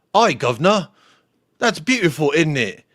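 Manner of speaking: bad fake British accent over American speech. Explaining uk dialects, the speaker demonstrates an american's attempt at a british accent. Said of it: "an American trying to acclimate to a British accent".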